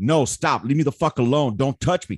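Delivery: put-on firm, decisive-sounding tone. Acting out how someone gives a firm no: acting out a firm no. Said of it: "if a fucking firm".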